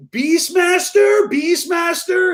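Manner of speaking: vague put-on Swiss accent, very high-pitched. Retelling how the shop called out a name in the waiting room, imitating a swiss accent. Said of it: "whatever a Swiss accent is".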